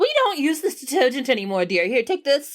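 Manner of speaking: high, fast, fussing mother voice.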